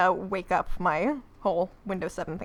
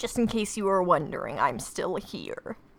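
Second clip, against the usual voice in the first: announcer-style film narrator voiceover. Speaker recapping an episode's pointless opening narration: Transformers narrator impression. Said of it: "That was my that was my impression of the narrator".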